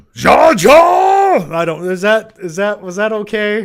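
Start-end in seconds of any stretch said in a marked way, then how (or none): 0.2-1.6 very high, very loud belted call, Jar drawn out. Answering a viewer's request for a Boss Nass impression: Boss Nass impression. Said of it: "your best Boss Nass impression from Star Wars".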